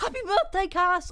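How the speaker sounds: high voice cracking and breaking mid-phrase. On stream, wishing someone a happy birthday, voice cracking. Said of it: "ignore the fucking voice crack".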